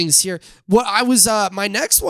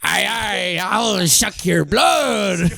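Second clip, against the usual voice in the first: vampire creature voice talking like a pirate. Acting out a vampire jumping from the bushes: playing a pirate-like vampire. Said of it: "It's a vampire".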